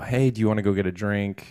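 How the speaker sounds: ordinary talk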